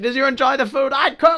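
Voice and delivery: very high, heavily exaggerated British voice. Retelling her character asking bar guests about the food, in an exaggerated British Patsy Stone voice. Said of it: "an exaggerated British version".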